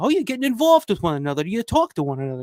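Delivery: put-on cool, relaxed, swooping New York accent. Imitating a cameo role's line from the film: Russ Streiner New York accent. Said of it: "that New York accent or whatever".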